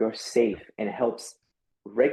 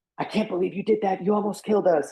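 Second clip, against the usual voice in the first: all-out, high-pitched scream at the top of lungs; 8 semitones higher than usual. Imagining a partner right after a car accident: imitating a partner screaming. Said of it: "screaming at the top of her lungs".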